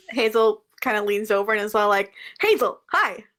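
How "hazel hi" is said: bright, sunny, upbeat, cheerful voice. Playing a character leaning over to greet a table: upbeat in character. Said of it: "Hazel and Clash are just so upbeat".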